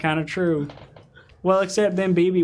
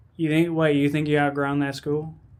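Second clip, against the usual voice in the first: ordinary delivery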